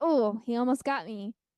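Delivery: ordinary delivery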